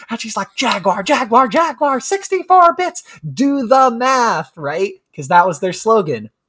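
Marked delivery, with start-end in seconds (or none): 0.5-4.5 put-on very high, deliberate, drawn-out shouting. Retelling a commercial where a woman at a chalkboard yells at adults: imitating a woman yelling at a class. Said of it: "she's yelling at them".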